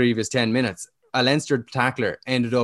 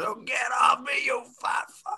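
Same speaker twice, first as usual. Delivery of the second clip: mock sudden angry, fed-up outburst; 12 semitones higher, 5 dB quieter than usual. Retelling a rugby player's outburst at an opponent: imitating someone losing it. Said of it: "eventually just loses it and goes".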